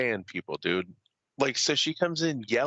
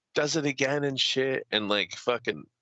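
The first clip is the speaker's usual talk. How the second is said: ordinary talk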